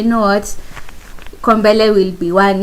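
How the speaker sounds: ordinary delivery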